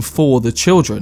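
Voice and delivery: ordinary talk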